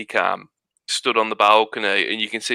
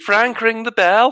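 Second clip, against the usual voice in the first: very high, botched Scottish accent slipping into Scouse; 13 semitones higher, 3 dB louder than usual. Retelling his own remark to Frank, attempting Scottish: a Scottish attempt that sounds Scouse. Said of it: "that was Scouse".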